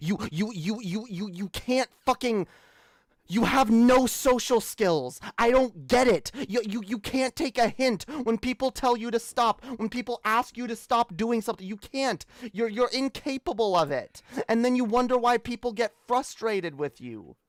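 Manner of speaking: exasperated rant, temper breaking, words tripping over. Venting about a person who frustrates the speaker, losing temper. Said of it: "I'm losing it".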